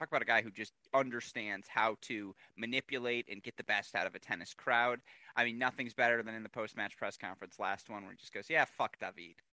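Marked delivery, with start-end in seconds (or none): 8.5-9.3 mock-sarcastic, joking, affectionate tone, much lower pitch. Quoting a tennis player's post-match press conference answer, retelling a sarcastic quip. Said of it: "the sarcasm and the joking, loving way in which he said it".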